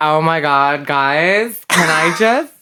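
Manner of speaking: exaggerated flamboyant put-on voice.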